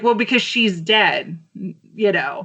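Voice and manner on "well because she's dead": ordinary talk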